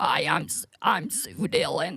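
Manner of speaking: very slow, otherworldly, alien-sounding drawl. Trying to imitate a friend introducing herself: imitating Sue Dillon, sounding like an alien. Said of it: "you sound like an alien".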